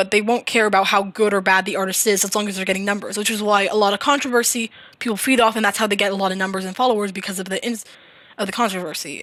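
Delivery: fast, rattled-off, rushing words. Speaker explaining a point at length to listeners, talking fast. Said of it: "I'm sorry that I'm talking fast".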